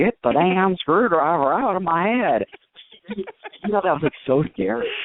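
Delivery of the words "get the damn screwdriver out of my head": slow, badly done, put-on Southern accent. Retelling a movie scene where a stabbed head speaks, in a really bad southern accent. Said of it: "in like a really bad Southern accent".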